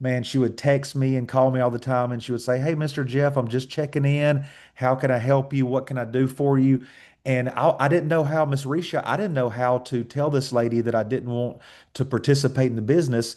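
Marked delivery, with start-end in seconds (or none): 2.6-6.9 put-on strong country accent. Retell a country lady's calls to check in, imitating Miss Kim Gray's strong country accent. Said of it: "Miss Kim Gray's accent is strong".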